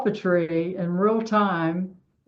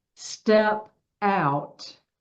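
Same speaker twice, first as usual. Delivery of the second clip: put-on metallic robotic voice. Retelling what a voice said after a roar: imitating a metallic robotic voice. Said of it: "this metallic or robotic voice says".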